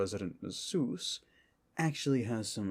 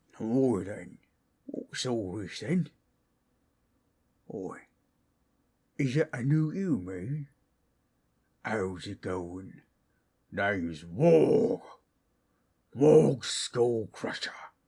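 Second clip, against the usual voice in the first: loud, booming orc voice; 5 dB louder than usual. The orc character greets newcomers, in Waaagh orc voice. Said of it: "He's a full orc".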